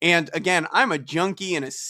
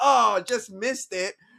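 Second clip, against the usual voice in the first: put-on unbothered, brazen tone, high and drawn-out; 6 semitones higher than usual. Retelling a quarterback's reaction after a bad throw: imitating audacious shrug-off. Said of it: "with the audacity".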